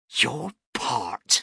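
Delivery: scornful, angry hiss. Narrator reads a woman answering a man who claims he did his part, hissing. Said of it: "she hissed".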